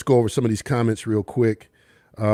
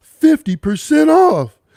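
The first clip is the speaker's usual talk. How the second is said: very high, swooping, excited announcer-style yell; 4 dB louder than usual. Retelling how you tried to sound excited in your basement studio, imitating Gerald McBride, put-on excited yell. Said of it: "I'm trying to sound like Gerald McBride and I'm going".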